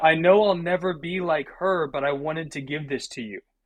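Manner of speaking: mock-tearful speech. Recounting a woman who presented a signed photo, imitating someone weeping. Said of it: "was weeping".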